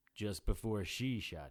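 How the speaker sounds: usual speaking voice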